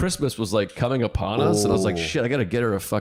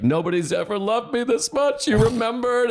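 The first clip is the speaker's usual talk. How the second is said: very high, tearful bawling, weeping through words; 11 semitones higher than usual. Retelling a partner's reaction to a Christmas gift: imitating someone bawling. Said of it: "just started bawling".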